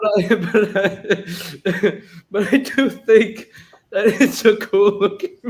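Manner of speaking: slow, high-pitched words coming through laughter. Giving an opinion during a ranking: laughing while talking. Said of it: "he can't even say that with a straight face".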